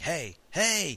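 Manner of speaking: called-out voice.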